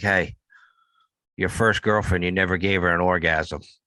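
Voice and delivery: put-on whisper. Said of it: "I'd probably whisper in my clone's ear".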